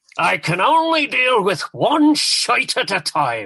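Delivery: loud, stentorian, projected, drawn-out boom. Recalling a voice heard from a dressing room, everyone listening: retelling a loud, stentorian line. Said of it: "in this loud, stentorian voice".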